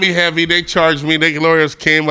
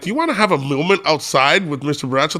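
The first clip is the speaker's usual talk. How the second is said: usual speaking voice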